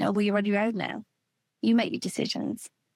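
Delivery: ordinary talk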